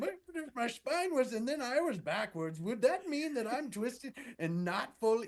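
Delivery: croaky, hoarse voice. Retelling trying to explain something to people in a garage, in a put-on hoarse voice. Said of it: "My voice is a little hoarse".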